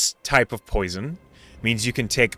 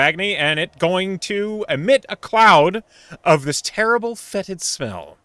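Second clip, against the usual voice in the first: normal talking voice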